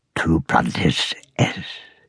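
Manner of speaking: sharp, low, urgent whisper. Narrating a friar speaking Latin to a boy in a story, sharp whisper. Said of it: "the friar whispered sharply".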